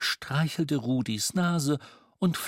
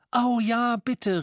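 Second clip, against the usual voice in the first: pitched-up, eager calling-out voice; 8 semitones higher, 4 dB louder than usual. Reading a story, the boy Jamiro answers Miss Mistletoe's offer; called out. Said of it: "rief Jamiro".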